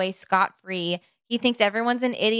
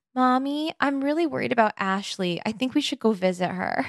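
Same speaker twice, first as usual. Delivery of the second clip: put-on childlike little-kid voice; 2 semitones higher than usual. Retelling a movie's mid-credit scene where he turns to his mom: imitating a little kid's voice. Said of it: "as, like, a little kid, and he goes".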